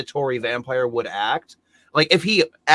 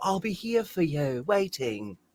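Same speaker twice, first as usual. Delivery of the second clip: mock bad British accent, higher and quieter; 3 semitones higher, 9 dB quieter than usual. Mocking an actress's awful British accent: imitating Winona Ryder's bad British accent. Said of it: "him and Winona Ryder both doing a British accent that just sounds awful".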